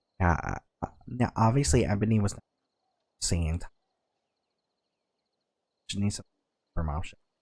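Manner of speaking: hushed, whispered voice. Voicing a character who whispers to a player in the tavern: whispering. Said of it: "and whispers to you".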